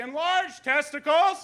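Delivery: put-on shout. Retelling the receptionist calling out the reason aloud: imitating someone shouting. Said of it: "shouting the order to everybody".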